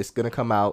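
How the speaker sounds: normal talking voice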